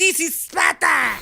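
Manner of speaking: little, wimpy, very high, creaky weenie voice. Joking how the real speaker probably sounded: little weenie voice. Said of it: "little weenie voices in history".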